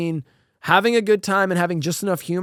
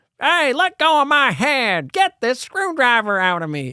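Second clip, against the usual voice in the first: silly, goofy, high-pitched cartoon voice; 5 semitones higher than usual. Retelling a movie scene where a decapitated head talks, in a goofy voice. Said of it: "they gave it like a goofy voice".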